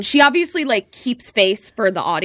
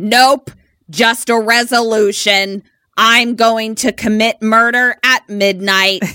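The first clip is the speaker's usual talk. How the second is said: put-on phantom-like voice, louder; 5 dB louder than usual. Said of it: "That's what the voice sounds like".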